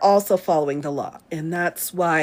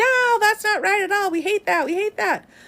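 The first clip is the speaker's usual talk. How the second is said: very high, all-out screaming; 14 semitones higher than usual. Imitating Gorsuch dissenting in the minority: imitating Gorsuch screaming. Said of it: "in the minority just screaming like".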